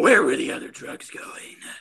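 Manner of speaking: low, deep growling voice, not gravelly.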